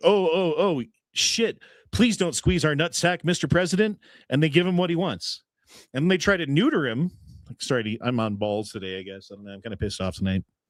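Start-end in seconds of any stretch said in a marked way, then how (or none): 0.0-4.0 scared, frightened, begging, pleading voice. Retelling how the countries answer the president: mock pleading countries. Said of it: "And they're like".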